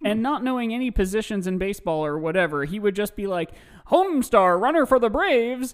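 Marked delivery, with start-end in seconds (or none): 3.9-5.7 put-on loud, high, old-timey radio commercial announcer voice. Telling about a friend who knew nothing of sports, imitating James's old-timey radio voice. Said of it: "he would always do this old timey radio impression".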